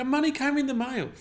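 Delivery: high, loud, excited, insistent voice.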